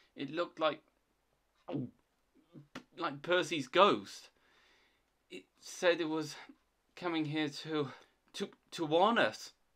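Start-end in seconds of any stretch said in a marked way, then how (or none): none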